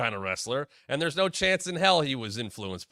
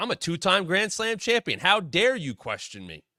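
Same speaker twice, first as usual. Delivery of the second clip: fired-up, indignant, heated boasting tone; 4 semitones higher than usual. Retelling how Miz reacts when provoked: imitating Miz fired up. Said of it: "Miz gets all fired up".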